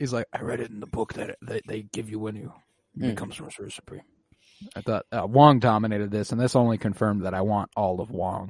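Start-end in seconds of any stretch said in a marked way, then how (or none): 0.3-4.0 breathy, barely voiced, very hushed whisper. Retelling a character's line from the film: imitating a whisper. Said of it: "he kinda, like, whispers it".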